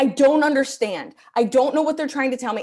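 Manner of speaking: screaming, exasperated, at-wit's-end outburst. Retelling staring at a confusing assembly picture: imitating her own screaming. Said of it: "I'm screaming at a piece of paper being like".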